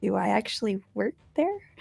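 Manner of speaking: hushed half-whisper under the breath. Speaking in character during a game scene: half-whispering under breath. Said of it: "Whispers under my breath".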